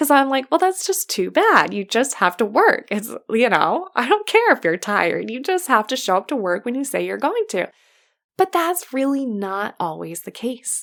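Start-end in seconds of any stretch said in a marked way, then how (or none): 0.5-7.7 irritated, annoyed, dismissive, no-excuses tone. Retelling an old reaction to a no-show, imitating own irritation. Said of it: "And I'm still annoyed saying it".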